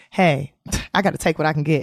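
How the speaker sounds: usual speaking voice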